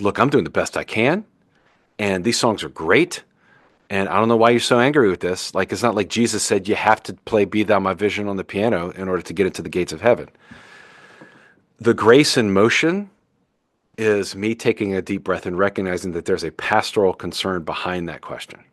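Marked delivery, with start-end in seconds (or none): none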